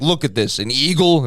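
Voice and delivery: put-on loud New York guy accent. Retelling what the guy says at the Bronx Zoo: imitating a New York guy. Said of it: "He's walking around the Bronx Zoo and he's like".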